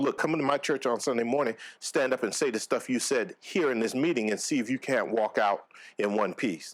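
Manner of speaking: plain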